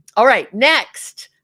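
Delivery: loud, drawn-out, belted yell.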